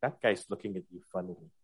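soft, quiet half-whisper. Speaker voices their Hexblade patron speaking into their ear: half-whispering in the ear. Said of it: "whispers in my ear like".

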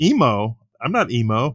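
normal talking voice

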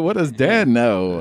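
put-on old-timey vintage movie trailer announcer voiceover. Taking up the suggestion of an old-timey trailer, old-timey trailer announcer voice. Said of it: "We should do an old timey one".

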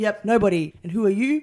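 pointed driving instructor voice. Retelling a lesson with a manual driving instructor, imitating the driving instructor. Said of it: "He's like".

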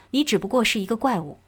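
ordinary talk

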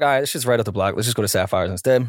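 ordinary delivery

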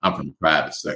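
deep, ghastly, dead-serious low voice.

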